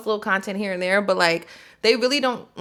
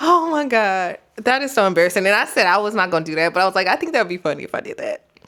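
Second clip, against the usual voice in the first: giggly, talking through laughter; 4 dB louder than usual. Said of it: "I'm, like, crying right now".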